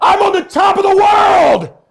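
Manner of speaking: very high shouted line. Retelling standing on top of Mount Everest: retelling a shout. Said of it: "I shouted".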